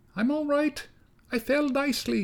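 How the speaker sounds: tiny, very high, faint, barely audible mouse voice. Narrator reads the baby mouse answering from the bottom of the cello, faint baby mouse voice. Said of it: "the baby mouse's voice ... so faint it could hardly be heard".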